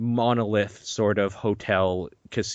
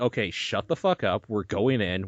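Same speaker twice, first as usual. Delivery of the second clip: mock-annoyed, put-on irritated voice. Retelling what a friend said while the speaker was freaking out, imitating an annoyed friend. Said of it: "She's just like".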